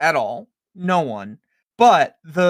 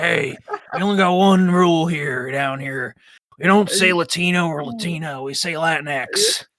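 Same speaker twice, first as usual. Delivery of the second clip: put-on Southern American drawl. Joking bit as a guy from the Southern Midwest, Arthur Morgan voice. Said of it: "like a guy from the South South Midwest, Southern Midwest, like in an Arthur Morgan voice".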